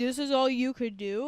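mock-grumpy, complaining tone. Acting out what a guy said when he got back; mock-grumpy. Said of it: "he's all grumpy and he's like".

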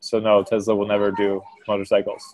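plain

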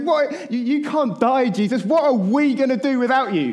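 very high, frantic, losing-his-mind shouting. Retelling a man yelling at someone who just said he will die, imitating his yelling. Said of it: "He starts yelling at Jesus".

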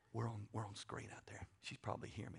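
hushed whisper. Telling an audience about a car bought for her while she may be listening, whispering. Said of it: "I don't know why I'm whispering".

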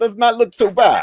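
exaggerated, very high, loud Kazakh accent. Repeating the other speaker's remark in a Borat voice. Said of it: "say that in like a Borat voice".

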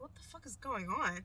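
ordinary delivery

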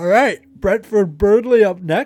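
very high, loud words stretched through a yawn. Speaker moving on to the next match pick, yawning while talking. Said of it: "Sorry, I'm yawning".

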